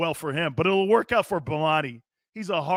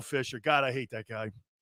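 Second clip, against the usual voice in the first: usual speaking voice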